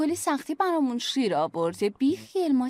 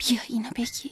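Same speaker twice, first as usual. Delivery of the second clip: low-volume hushed speech; 3 semitones lower than usual. Drama scene, handing someone medicine, speaking quietly. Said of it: "چرا آروم حرف میزنی؟".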